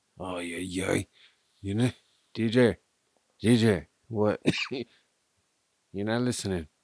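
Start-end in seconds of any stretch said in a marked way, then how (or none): 1.6-6.7 mock drunk voice, louder. Joining in on a friend's drunk manner: imitating drunk Korn. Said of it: "Drunk Korn is".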